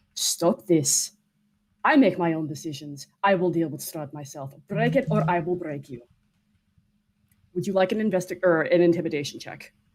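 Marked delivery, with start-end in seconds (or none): 0.2-6.0 icy, frosty, haughty, imperious noble-sounding tone. Voicing a character threatening an elf: frostiest haughty tone. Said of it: "in the frostiest tone that she can".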